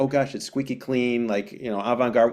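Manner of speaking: ordinary talk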